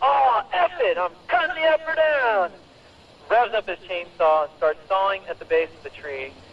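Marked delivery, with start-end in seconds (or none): 0.0-2.5 very high, dragged-out, drawn-out shout. Retelling what a hostile logger yelled: imitating someone yelling. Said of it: "One of them yelled".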